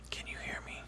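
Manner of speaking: very quiet, hushed, breathy near-whisper. Testing how a microphone handles quiet speech: speaking quietly. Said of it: "when I speak quietly".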